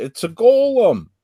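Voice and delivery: very high, piercing shriek. Voicing a character who screams a warning about the creature: character screaming. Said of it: "Kira screams".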